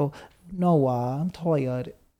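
put-on satirical, very slow, drawn-out baby talk. Answering whether baby voice is attractive, showing the satirical baby voice. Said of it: "I use it sets in like in satire".

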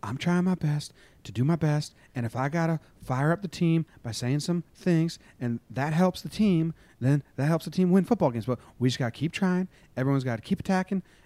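put-on whispery, whispering interview-style voice. Act out his post-game interview as he tries to stay calm and articulate, imitating someone talking in a whisper. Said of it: "he just kind of talks in a whisper".

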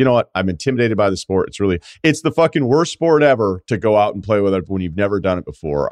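ordinary delivery

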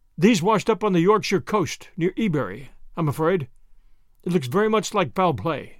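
plain

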